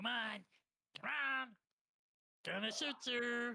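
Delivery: squeaky, very high goblin voice, taunting. Narrator voicing goblins heard from the other room; goblin voices from next room. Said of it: "goblinoid voices from the other room going".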